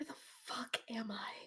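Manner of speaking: hushed, breathy, very quiet whisper. A character in a game scene speaks in a very quiet whisper. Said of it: "She's going to very quietly whisper".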